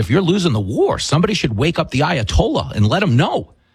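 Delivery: normal talking voice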